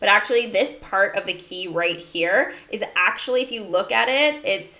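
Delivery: ordinary delivery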